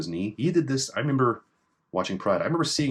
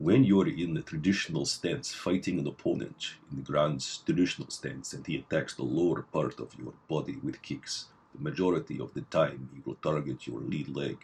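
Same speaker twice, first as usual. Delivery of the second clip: deep, very low Russian accent; 7 semitones lower, 4 dB quieter than usual. Explaining a martial arts kick defence, in a put-on Russian accent. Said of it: "That's my Russian accent".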